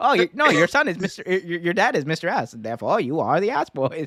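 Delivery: animated voice with pitch swooping all over. Retelling how Danhausen greets the Gun Club while holding the camera: imitating Danhausen. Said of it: "he's like".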